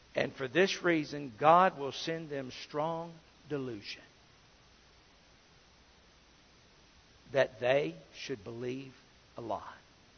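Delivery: very quiet, very slow, word-by-word reading. Reading a verse aloud to listeners so they get it, very slowly. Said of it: "I read that very slowly".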